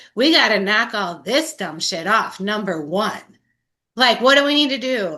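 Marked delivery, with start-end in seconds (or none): none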